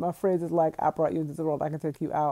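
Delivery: ordinary delivery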